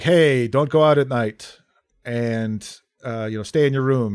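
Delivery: ordinary delivery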